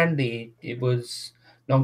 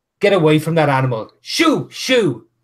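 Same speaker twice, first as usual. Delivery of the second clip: loud yelling, swooping; 4 semitones higher, 6 dB louder than usual. Voicing an older man chasing a dog from someone: yelling. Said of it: "when he's yelling".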